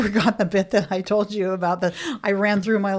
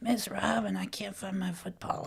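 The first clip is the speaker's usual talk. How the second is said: put-on very hushed, raspy, gravelly five-year-old voice; 11 dB quieter than usual. Retelling what a five-year-old said to her, imitating Adrian's gravelly voice. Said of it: "Why do you think Adrian has a gravelly voice?".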